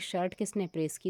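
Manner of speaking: plain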